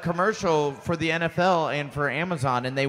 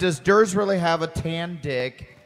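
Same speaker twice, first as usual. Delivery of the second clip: ordinary delivery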